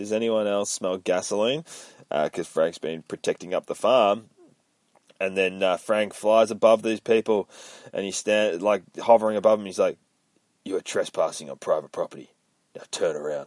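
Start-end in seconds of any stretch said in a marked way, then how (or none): 10.6-13.5 low, gritty voice. Telling a story, the speaker voices Frank hovering over trespassers: gritty Frank Castle voice. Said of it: "I like my Frank Castle voice. It's very gritty".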